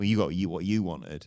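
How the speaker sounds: ordinary delivery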